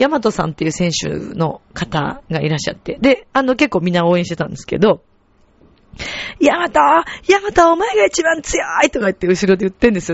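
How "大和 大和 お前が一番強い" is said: very high, stretched-out, ringing cheering yell. Retelling a woman in the crowd cheering for a fighter: imitating a woman yelling. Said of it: "あまりの叫びように".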